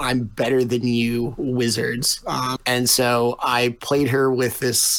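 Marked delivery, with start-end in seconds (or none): none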